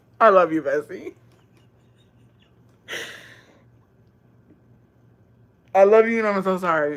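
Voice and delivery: talking through laughter. Apologizing to the letter writer Bessie after reading her message: laughing while talking. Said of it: "I'm sorry that I'm laughing".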